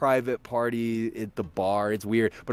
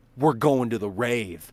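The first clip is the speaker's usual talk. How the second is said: normal talking voice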